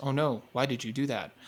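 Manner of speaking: soft, flat, wooden, lifeless monotone. A viewer mocks a main character's voice acting: imitating a wooden monotone. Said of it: "he's just such a monotone delivery".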